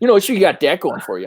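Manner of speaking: put-on Wisconsin regional accent. Voicing a trapping company man answering the players: Wisconsin accent. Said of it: "he's the Wisconsin guy".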